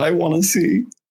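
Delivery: small, tiny-voiced speech. Retelling what someone said in the quietest voice ever heard: imitating the quietest voice. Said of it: "the quietest voice I've ever heard".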